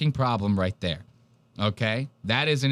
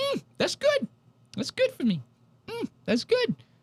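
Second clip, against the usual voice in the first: put-on very high child's voice. Retelling a friend tasting something as a ten-year-old: imitating Lev as a ten-year-old. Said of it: "as a ten-year-old, he does this".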